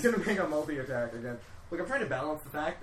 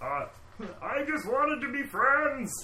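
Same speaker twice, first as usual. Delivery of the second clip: put-on fat man voice, much higher pitch; 10 semitones higher, 3 dB louder than usual. Voicing the fat man character mid-battle in a tabletop game: put-on fat man character voice. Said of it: "fat man! ... That's [name]'s voice for sure".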